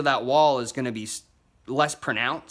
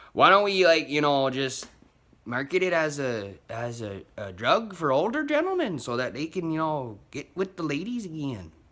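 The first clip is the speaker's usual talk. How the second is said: bad, horrible put-on Canadian accent. A speaker acts out what others suggested, horrible Canadian accent. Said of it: "that was a horrible Canadian accent".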